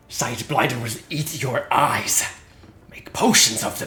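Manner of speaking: raspy hobgoblin voice. Voicing a hobgoblin speaking in the scene, in a raspy hobgoblin voice. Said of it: "the hobgoblin perfectly as it rasps".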